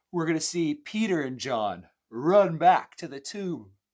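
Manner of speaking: very loud, high words stretched by a yawn. Teaching on the end of John, the speaker talks through a yawn. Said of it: "I'm yawning".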